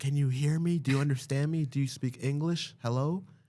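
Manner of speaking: top-of-the-lungs, loud, high-pitched screaming. Retelling how an airport worker screamed at a traveler: imitating a woman screaming. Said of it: "screamed at the top of her lungs".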